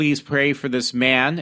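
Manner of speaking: normal talking voice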